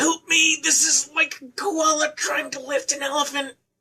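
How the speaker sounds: mock scream, yelled high and straining.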